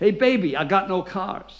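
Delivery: called out, shouted, slow and easy. Retelling what a rental office clerk shouted at the door: imitating a clerk shouting. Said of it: "it just shouted out".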